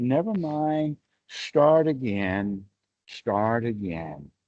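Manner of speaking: put-on doting, loving old grandmother's tone. Showing how a loving grandmother answers a naughty child: loving old grandmother's tone. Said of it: "the tone of voice of an old grandmother who loves her grandchild".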